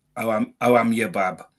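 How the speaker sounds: Wolverhampton yam-yam dialect accent. Imitating how people in Wolverhampton greet you: imitating a Wolverhampton accent. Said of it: "it's just a local dialect".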